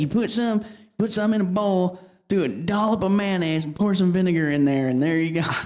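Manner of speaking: put-on heavy backwoods country bumpkin accent. Retelling what a man told the speaker, in a country bumpkin accent. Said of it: "but wicked country bumpkin accent".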